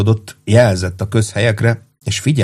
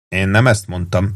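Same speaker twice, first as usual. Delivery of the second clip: ordinary delivery, nothing marked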